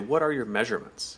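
usual speaking voice

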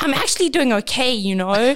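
mock sharp, snappish, irritable delivery. Retelling how their partner snapped back at their encouragement, imitating a snappish reply. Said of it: "he snapped at me something like".

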